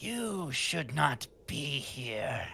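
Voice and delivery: rasping voice, very slow and drawn out. Game master voicing a female figure answering the player's character, raspy voice. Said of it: "a raspy voice kind of responds to you".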